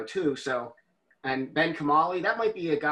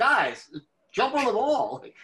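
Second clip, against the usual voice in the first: put-on scream, much higher; 9 semitones higher, 3 dB louder than usual. Recounting watching a football game on the couch, the speaker retells screaming at the TV. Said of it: "I was like".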